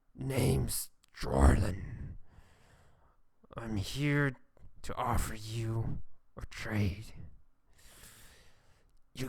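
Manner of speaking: low, growling, saggy voice. Voicing a character in a story, with a growling, saggy voice. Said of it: "So his voice is like growl and like saggy".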